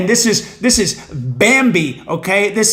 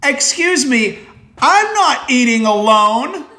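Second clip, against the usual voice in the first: mock mild annoyance, slower; 5 semitones higher than usual. Retelling a man dining alone answering an invitation to join, retelling a slightly annoyed reply. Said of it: "somewhat angered at my comment ... a little annoyed".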